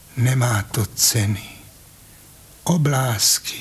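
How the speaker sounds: soft whisper under the breath. Narrator reads the old uncle, gazing toward Petřín, whispering. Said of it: "Pak zašeptal".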